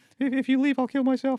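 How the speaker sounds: very high-pitched put-on character voice. Acting out someone with borderline personality, high-pitched put-on voice. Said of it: "I'm doing a high pitched voice".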